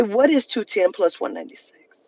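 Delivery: ordinary delivery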